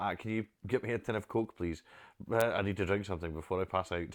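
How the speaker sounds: ordinary talk, nothing marked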